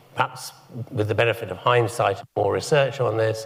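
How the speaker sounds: usual speaking voice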